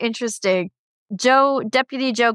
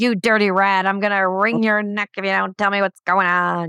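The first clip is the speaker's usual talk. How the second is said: put-on Chicago accent. Describing how a woman in a scene sounded, put-on chicago accent. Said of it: "she seemed like this chicago like".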